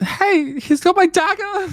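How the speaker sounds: high, alarmed shout.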